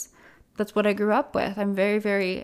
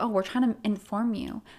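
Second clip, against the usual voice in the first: put-on sassy, mocking tone. Reading out a comment in a mocking way: sassy imitation of a comment. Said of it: "I don't mean to be so sassy".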